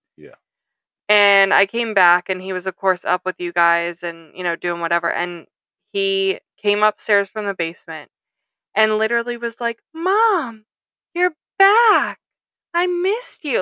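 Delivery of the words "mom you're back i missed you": put-on sweet, very high little child voice. Mother retelling her son greeting her on her return, imitating his sweet little voice. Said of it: "in his sweet little voice".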